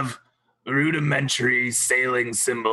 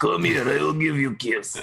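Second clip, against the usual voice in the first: put-on Russian accent; 3 semitones higher than usual. Redoing an in-character line asking for a kiss: Russian accent. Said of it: "I'm supposed to do that in Russian accent".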